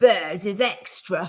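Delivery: growling. Reading a Paddington story, the taxi driver stares at Paddington and speaks, growled. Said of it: "he growled".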